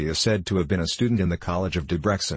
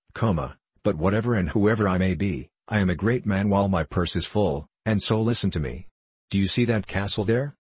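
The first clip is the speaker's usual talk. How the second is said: usual speaking voice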